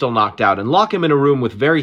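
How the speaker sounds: ordinary delivery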